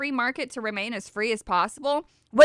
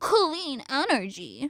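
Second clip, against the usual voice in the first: mocking, spooky ghost-like put-on voice, ooh-woo; 4 dB quieter than usual. Speaker mocks a company's claimed clean-energy investment: spooky mocking ooh-woo voice. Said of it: "I'm saying that specifically with an ooh-woo voice".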